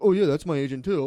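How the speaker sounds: loud, offhand, casual comedian voice. Mocking older comedians who name-drop their agent: imitating Trackman. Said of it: "fucking Trackman would do that".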